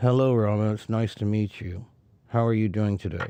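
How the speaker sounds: indistinct mumbling, mouth barely moving. Teaching what it means to mumble: mumbled, mouth barely moving. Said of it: "It's not very clear because my mouth is not moving very much at all".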